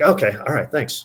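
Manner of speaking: real nonchalant, casual, easygoing, offhand tone. Retelling a bowler asking his score right after finishing: nonchalant, imitating Norm. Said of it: "just real nonchalant".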